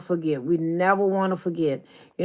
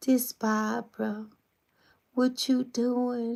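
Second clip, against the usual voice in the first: put-on soft, high, babyish voice; 5 semitones higher, 6 dB quieter than usual. A speaker imitates how Barbara used to answer when called, Barbara's soft baby voice. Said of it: "She had this real soft baby like voice".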